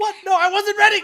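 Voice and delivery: shrill, very loud, high-pitched protesting yell. Narrator voicing a character suddenly trapped in ice, shouting. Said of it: "As he just shouts".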